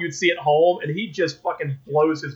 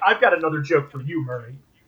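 ordinary delivery

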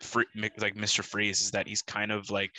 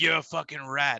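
put-on growling character voice, a bit higher; 5 semitones higher, 4 dB louder than usual. Retelling the scene where Falcone is arrested: Penguin voice. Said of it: "Penguin's like".

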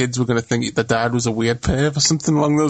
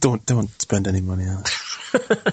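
mock-serious tone, lower pitch; 4 semitones lower, 3 dB quieter than usual. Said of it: "You said that with such seriousness".

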